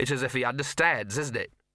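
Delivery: ordinary delivery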